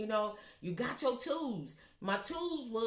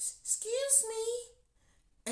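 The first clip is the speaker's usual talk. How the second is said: put-on tiny, soft, gentle, very high old-lady voice; 12 semitones higher than usual. Retelling a lady saying this to him, imitating a soft little voice. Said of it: "with a little soft voice".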